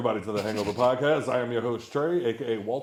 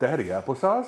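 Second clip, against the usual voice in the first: put-on small child voice. Retelling how his little son asks for applesauce: imitating his little son. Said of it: "he'll just look over at me and just be like".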